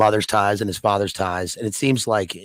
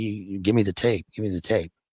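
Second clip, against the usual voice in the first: hushed, muttered under the breath; 3 dB quieter than usual. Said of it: "It's kind of under his breath".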